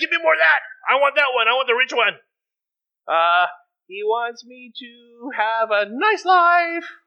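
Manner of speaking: put-on, high-pitched, squeaky voice. Acting out someone's reply to a quoted saying, in a high-pitched voice. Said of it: "I said it in a high-pitched voice".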